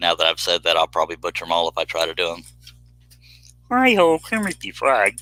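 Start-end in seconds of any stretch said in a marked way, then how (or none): 3.7-5.1 very high pitch, stretched out slowly. Showing an impression after admitting to doing impressions: Kermit the Frog impression. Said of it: "I like to do impressions too".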